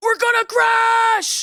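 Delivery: shouting. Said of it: "by yelling like that".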